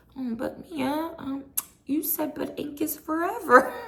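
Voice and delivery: very high, sugary-sweet, sympathetic tone. Retelling how Andy answered a crying Mia at the reunion, imitating Andy's sweetest voice. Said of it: "in like the sweetest voice".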